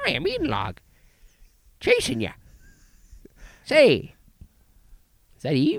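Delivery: very high, swoopy, cute sing-song voice. Describing a movie creature and speaking as it, cute Eden Log voice. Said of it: "This actually sounds cute".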